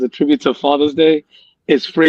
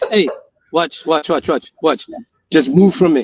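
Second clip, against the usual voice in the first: ordinary talk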